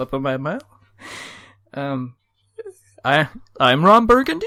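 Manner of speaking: Australian-style uptalk rising at every sentence end. Repeating a viewer's comment as if asking, rising at end of each sentence. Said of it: "You just go up at the end of each sentence".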